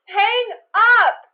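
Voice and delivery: shouting. Telling Dad to hang up the phone during a call: yelling. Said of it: "Why are you yelling at me?".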